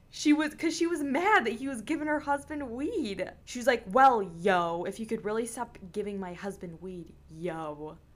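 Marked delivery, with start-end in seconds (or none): 3.9-7.9 put-on condescending tone in a woman's voice. Retelling a woman mad her husband was given weed, imitating a condescending woman. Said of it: "I feel like it was condescendingly".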